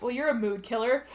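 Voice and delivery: plain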